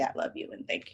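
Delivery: soft, voiceless whisper.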